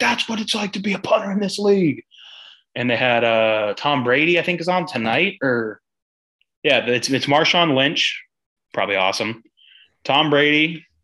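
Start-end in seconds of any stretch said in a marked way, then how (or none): 0.0-2.0 mock, very high, hollering, screaming shout. Retelling what a player yelled after a great punt, imitating him screaming and yelling. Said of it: "He was like screaming and yelling like".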